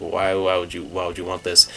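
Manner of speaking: ordinary delivery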